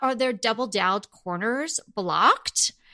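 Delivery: plain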